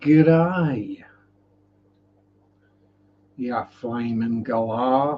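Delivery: put-on Australian accent. Breaking off a list of aquarium fish into an australian accent. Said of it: "there is the end of my Australian accent".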